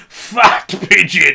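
mock, ragged, rough, creaky shriek. Retelling a Tango advert where the man falls into the bath: imitating Tango Man screaming. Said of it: "and he screams".

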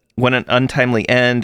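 ordinary delivery

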